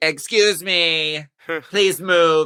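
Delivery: put-on woman shopper voice. Acting out a contestant duck walking in her boat: imitating a lady in the grocery store. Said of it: "she's that lady in the grocery store".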